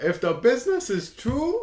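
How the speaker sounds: high, put-on girl voice.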